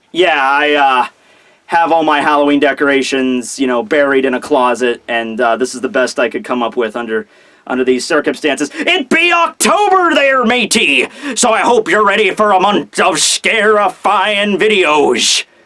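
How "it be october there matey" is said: put-on pirate voice. Opening a chapter review video, playing a stereotypical pirate voice. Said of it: "I be a stereotypical pirate".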